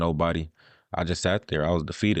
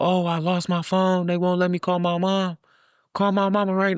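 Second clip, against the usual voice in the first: put-on, very high, desperate, frantic yelling; 13 semitones higher, 4 dB louder than usual. Recounting being held by police as friends walk up: retelling a yell. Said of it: "Like I'm yelling".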